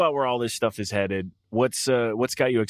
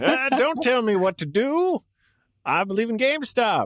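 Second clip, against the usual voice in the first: very high, old-fashioned put-on voice; 13 semitones higher than usual. Imagining an old-timey version of a co-host ordering stock: imitating old-timey Alexis. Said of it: "imagine old-timey Alexis being like".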